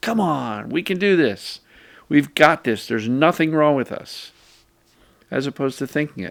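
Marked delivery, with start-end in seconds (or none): 0.0-4.3 rousing, energetic, vigorous encouraging tone. Showing how to put emotion into words: vigorous encouragement. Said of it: "with vigor and encouragement".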